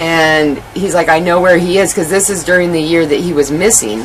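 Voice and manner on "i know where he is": plain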